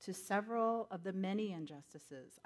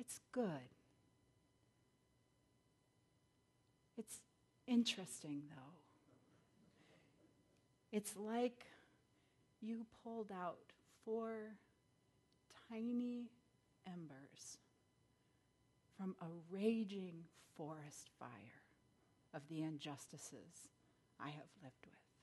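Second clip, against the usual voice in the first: gentle voice, much quieter; 7 dB quieter than usual. Retelling how the man answered after hearing the speaker's letter: retelling a gentle reply. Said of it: "drew in a deep, slow breath and said gently".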